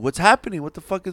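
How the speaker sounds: high, alarmed, worried voice.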